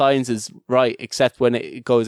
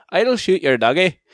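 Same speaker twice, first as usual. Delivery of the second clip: put-on Northern Ireland accent, pitched up; 6 semitones higher than usual. Showing the one Northern Ireland accent phrase they can do; Northern Irish accent. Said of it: "the only like Northern Ireland accent that I can solidly do".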